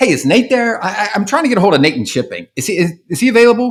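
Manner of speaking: frazzled, tripping over words. Showing how to ask a gatekeeper for someone by name: urgent, frazzled, stuttering. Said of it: "I stutter a little bit and make it sound as if, like, I'm kind of, like, urgent and frazzled".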